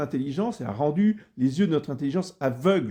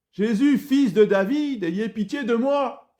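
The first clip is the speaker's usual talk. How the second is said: mock shouting, high, drawn-out cry; 8 semitones higher than usual. Speaker acting out a man crying to Jesus above the crowd, retelling a cry over a crowd. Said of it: "Il crie plus fort que la foule".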